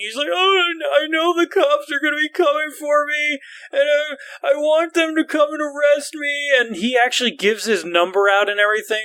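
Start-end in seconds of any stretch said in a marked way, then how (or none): 0.3-6.5 mock tearful, blubbering, high-pitched crying voice. Retelling what a man said while crying, imitating someone crying. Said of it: "And he's crying".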